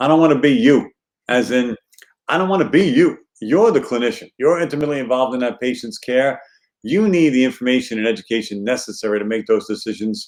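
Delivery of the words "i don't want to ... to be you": put-on Brooklyn accent throughout. Speaking to clinician listeners, in a brooklyn accent. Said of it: "in my best Brooklyn accent".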